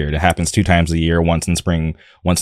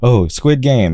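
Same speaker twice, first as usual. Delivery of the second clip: play-acted children shouting, high-pitched kids' yell; 6 semitones higher than usual. Retelling how children recognized the costume: imitating children yelling. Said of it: "yelling at me".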